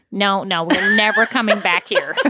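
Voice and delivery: plain everyday speaking tone, no put-on voice. Retelling what he said about a restaurant, the speaker imitates his actual voice. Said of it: "I'll go back to his actual voice".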